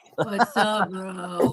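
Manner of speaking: deep, low, everyday speaking voice. Retelling what the producer said about viewers: imitating Enrique's voice. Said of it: "I called him Garfield 'cause he's always like this".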